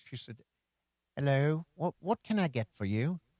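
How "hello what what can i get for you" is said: put-on British accent. Retelling what a waitress said when taking the order: imitating a waitress's British accent. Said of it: "had a British accent".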